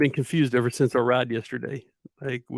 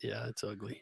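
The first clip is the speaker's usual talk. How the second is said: whispered, quieter; 3 semitones lower, 16 dB quieter than usual. Answering a question about how few showings there are: whispering. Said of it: "you didn't talk into the microphone and you whispered".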